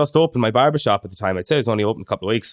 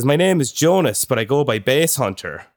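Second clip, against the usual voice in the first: ordinary talk, nothing marked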